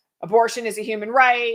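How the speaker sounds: normal talking voice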